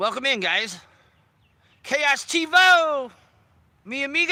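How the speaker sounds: very slow, thrilled, excited, high, drawn-out shout. Welcoming people who just joined in; yelling excitedly. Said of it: "I don't know why I'm yelling".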